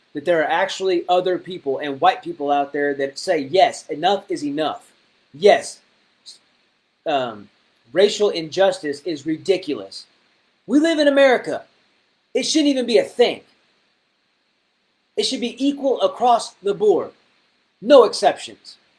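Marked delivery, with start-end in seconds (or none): 5.3-18.7 upset, worked-up voice. Speaking to an audience about the protests, a little upset. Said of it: "I got a little upset on that".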